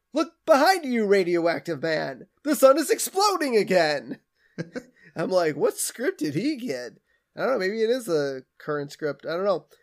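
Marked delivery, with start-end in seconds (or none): 0.1-4.2 big theatrical declamation, very dramatic swooping delivery. Retelling Bart rehearsing his Fallout Boy dialogue on the stove: Bart's mock-dramatic delivery. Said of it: "very dramatically".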